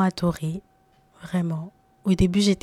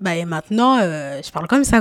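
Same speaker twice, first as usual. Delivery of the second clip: fairly strong, projected, a bit loud voice; 4 dB louder than usual. Showing the new way of speaking compared with before, a bit loud. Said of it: "je parle un peu fort".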